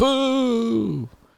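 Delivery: mock booing at very high pitch.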